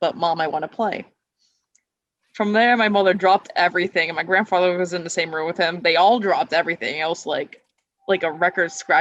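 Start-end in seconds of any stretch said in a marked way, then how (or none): 0.0-1.0 put-on innocent little-kid voice. Retelling answering his mother at bedtime, in the most wholesome childish voice. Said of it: "the most wholesomest childish voice".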